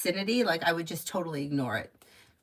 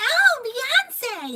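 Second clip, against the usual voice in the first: shrill, very high-pitched, loud cry; 7 dB louder than usual. Retelling what a woman once said, imitating a high-pitched voice. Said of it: "she had like a real high pitched voice".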